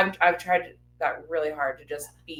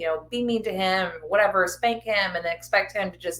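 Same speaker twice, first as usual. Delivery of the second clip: ordinary talk, nothing marked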